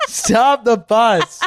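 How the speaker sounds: playful fake shout.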